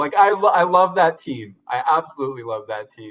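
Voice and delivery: heartfelt, near-tears, choked-up, emotional declaration. Talking about a team winning gold, getting emotional. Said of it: "Wow, I'm getting emotional".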